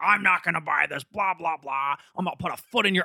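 put-on yelling sitcom-dad voice. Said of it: "yelling at the mall".

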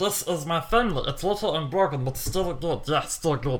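alien creature voice, cartoonish. Recounting the ending of Lilo and Stitch to the other speaker: Stitch impression. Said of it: "That's my Stitch impression".

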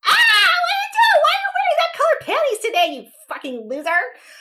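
frantic, shrill, very high, rattled-off jittery rant. Speaker voicing what her lady parts sound like, spazzy lady-parts voice. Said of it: "They're total spazzes".

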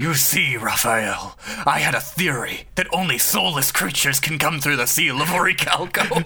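super growly, wicked villain voice. A character speaking to raphael, in a super growly evil voice. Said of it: "with his super growly evil voice".

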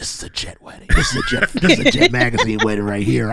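confiding stage-whispered aside. Retelling what a brother said at a wedding: imitating someone whispering. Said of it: "my brother whispers to me".

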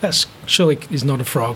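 plain

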